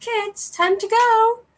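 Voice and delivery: very high, drawn-out call. In a mom joke, speaker plays the mother calling the kids, in Mary Poppins voice. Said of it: "In Mary Poppins' voice".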